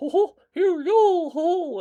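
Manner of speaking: very high squeak, stretched out long. Retelling a kid watching a video in a store: Mickey Mouse voice. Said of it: "he's watching Mickey Mouse".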